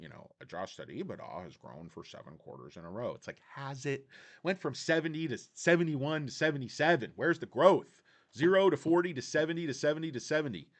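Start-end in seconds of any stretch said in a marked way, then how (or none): 0.4-3.1 very low voice with no excitement. Imitating a company CEO talking about earnings growth: monotone Anthony Noto impression. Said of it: "sort of monotone".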